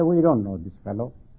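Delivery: dismissive low, quick tone.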